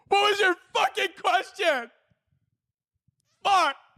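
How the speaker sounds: very high, shrill, severely overstimulated snapping. Mock audition as a seventh grade english teacher, severely overstimulated. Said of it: "Severely overstimulated".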